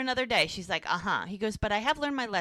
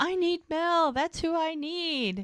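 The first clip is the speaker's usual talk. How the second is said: mock, high-pitched hollering; 7 semitones higher than usual. Retelling a story, quoting a woman's demand to a clinic: retelling a yell. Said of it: "And Fiona yells".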